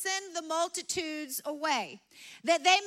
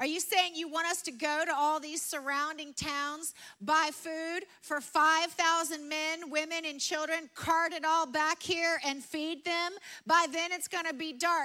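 ordinary talk, nothing marked

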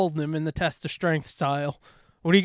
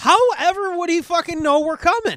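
shouting, much higher; 11 semitones higher than usual. During a role-play scene, a party member answers a captive's warning: shouting. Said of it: "so you're shouting at us right now".

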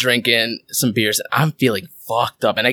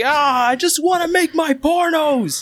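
mock very high, sloppy, drawn-out drunken holler. Retelling being drunk in Manhattan: imitating own drunken yelling. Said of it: "I was just yelling things".

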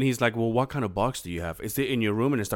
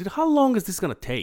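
patience snapping, angry blow-up, pitched up; 8 semitones higher than usual. Speaker retells finally blowing up at someone who kept him waiting, reenacting an angry outburst. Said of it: "finally I blew up and I said".

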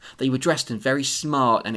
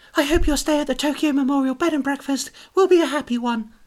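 very high, loud, gushing overeager delivery; 13 semitones higher, 6 dB louder than usual. Voicing Louise in a role-play game, delivering her line, overly enthusiastic Louise. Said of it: "I was a bit too enthusiastic with that".

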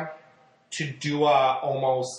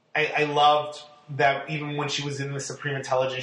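ordinary talk

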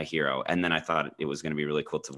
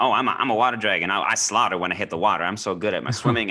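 loud, high, mocking middle-schooler gamer voice; 5 semitones higher, 7 dB louder than usual. Critiquing how the characters talk, mocking middle-schooler voice. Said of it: "the way they sound like middle schoolers".

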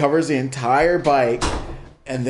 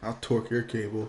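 sketchy, shady tone, lower and quieter; 3 semitones lower, 11 dB quieter than usual. The speaker drops a one-liner to the listeners in a sketchy tone. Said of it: "you can say anything in that tone, and it just comes out sketchy".

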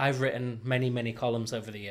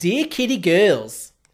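put-on Australian accent, higher and louder; 8 semitones higher, 13 dB louder than usual. Reading out a letter from Rebel Wilson: attempting an Australian accent. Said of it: "attempt to add to my list of failed accents an Australian accent".

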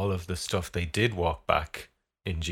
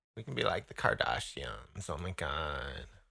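soft, croaky vocal fry; 3 semitones lower, 8 dB quieter than usual. After proposing they all talk in vocal fry, doing kardashian vocal fry. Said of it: "We'll talk in vocal fry".

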